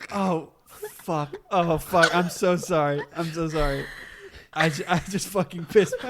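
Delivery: mock flustered, panicked, frantic voice. Asked to do an impression of them, imitating a panicked apology. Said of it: "do your impression of them".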